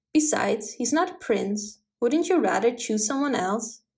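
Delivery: ordinary delivery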